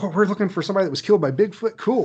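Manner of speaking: all-excited eager chatter, high and rapid. Retelling how a nice lady at the records office reacted: imitating someone excited. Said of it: "she got all excited".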